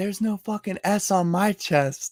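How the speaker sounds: high, shouted, yelled-back retort. Walking away, the speaker recalls yelling back at a woman: retelling a yell. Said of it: "I yelled back over at her".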